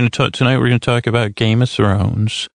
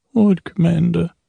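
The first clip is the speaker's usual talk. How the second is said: acted stern character voice with raised pitch; 6 semitones higher than usual. Answering a question put to Stannis: Stannis impression. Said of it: "Stannis, where are you".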